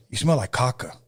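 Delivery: imitated English accent. Retelling a friend's remark to a client, imitating an English accent. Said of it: "But he had the English accent".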